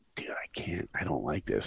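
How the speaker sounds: hushed, under-the-breath whispered protest. Retelling whispering to the fellow director beside him, whispering. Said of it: "I'm whispering to him".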